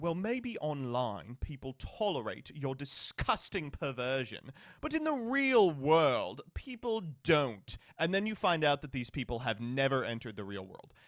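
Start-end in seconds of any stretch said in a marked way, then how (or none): 0.0-7.8 put-on British accent, swooping. Imitating a transphobe's argument: put-on british accent. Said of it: "I'm making the transphobe British".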